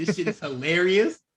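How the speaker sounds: normal talking voice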